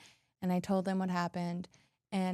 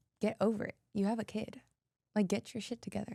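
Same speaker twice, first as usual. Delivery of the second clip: mock firm, no-nonsense, stern scolding tone; 3 semitones higher than usual. Recalling crying to the speaker's mom and quoting her reply: imitating a stern scolding. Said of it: "talked to me so stern".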